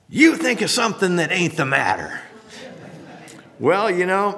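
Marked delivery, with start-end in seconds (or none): 0.2-2.2 growling voice. Telling a joke, a man on a failing plane answers the question, retelling a growl. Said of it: "And he growled".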